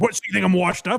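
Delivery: put-on sudden, furious, angry outburst. Retelling a comedian's outburst at a host: imitating Michael Richards' anger. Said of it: "sounds like a similar type of anger".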